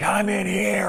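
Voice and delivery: very high yelled-out shout. Retelling a scene where a possessed man cries for help: imitating someone yelling. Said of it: "the dude yells out".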